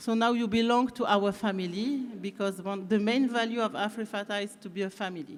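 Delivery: English with a little French accent. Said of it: "avec un petit accent français".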